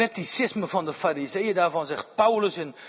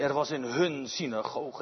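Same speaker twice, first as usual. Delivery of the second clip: hun said with strong stress; 3 semitones lower, 6 dB quieter than usual. Repeating the quoted verse aloud, with emphasis on hun. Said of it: "En je mag nadruk leggen, denk ik, op dat woordje".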